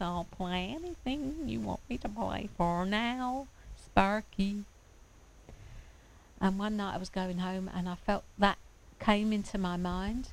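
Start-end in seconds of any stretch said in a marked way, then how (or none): 0.0-4.6 slow voice of a talking piano. Telling a story where the piano spoke to him: talking piano voice. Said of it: "in that sort of piano voice".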